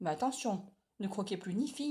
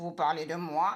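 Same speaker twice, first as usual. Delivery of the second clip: big, loud, gruff growling voice; 3 semitones lower, 5 dB louder than usual. Reading a story, a voice behind Fanny and Noé speaks: big growling voice. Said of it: "une grosse voix grogne".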